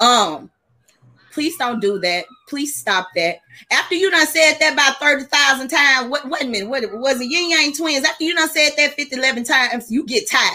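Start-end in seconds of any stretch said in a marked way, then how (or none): 1.3-3.4 calm, kind, gentle, polite tone. Showing how a parent first asks a child to stop: saying it nicely. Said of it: "the first time I said it nicely".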